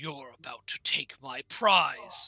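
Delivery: snarling dragon voice. Voicing a blue dragon answering an adventurer's question: dragon snarling. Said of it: "he snarls and goes".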